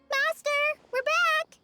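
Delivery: loud calling out. Calling out to the master on arriving back: shouting. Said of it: "You don't have to shout".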